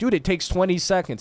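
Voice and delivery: acted-out frustrated tone. Recounting what was said to someone slow to log in, retelling frustrated words. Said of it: "I was getting really frustrated with him".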